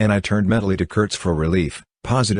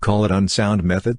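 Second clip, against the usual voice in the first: ordinary delivery, nothing marked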